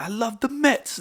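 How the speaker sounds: put-on very high, loud, blustering New York accent. Telling a friend about a radio show, doing a loud Artie Lange impression. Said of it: "like just real loud".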